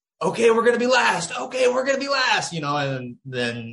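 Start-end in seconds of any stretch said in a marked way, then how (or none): 0.2-2.5 screamed in a very high-pitched voice. Retelling what four people around were screaming: imitating people screaming. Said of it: "four people around me just screaming".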